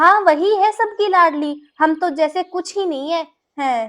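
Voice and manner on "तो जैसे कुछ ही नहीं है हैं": ordinary delivery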